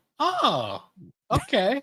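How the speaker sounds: put-on very high, swooping, bewildered, confused voice. Retelling how the store staff reacted: imitating a confused reply. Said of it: "a kind of confused".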